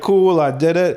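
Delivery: ordinary delivery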